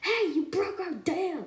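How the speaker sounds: high, mean-spirited beaver voice yell. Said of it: "They just yell at Boog and Elliot".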